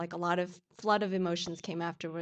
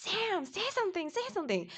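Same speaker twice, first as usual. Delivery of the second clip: very high, shrill, swooping scream; 13 semitones higher than usual. Recalling screaming at Sam over and over, retelling a scream. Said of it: "after I don't know how many times I screamed at him".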